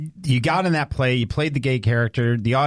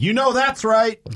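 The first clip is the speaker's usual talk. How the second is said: yelling out loudly. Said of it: "yelling out to you".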